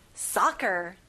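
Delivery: first syllable saw in soccer punched hard. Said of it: "saw를 좀 강하게 말해보세요".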